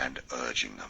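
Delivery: ordinary delivery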